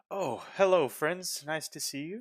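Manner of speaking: bright, cheerful voice, a touch high-pitched. Voicing the Burgomaster greeting visitors at his door: cheerful Burgomaster Dimitri voice. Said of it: "he's got this bright smile on his face. He's like".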